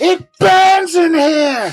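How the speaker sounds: muffled goblin yelling. Voicing a swallowed goblin calling from inside the frog: goblin yelling from inside a frog. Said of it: "this goblin just go".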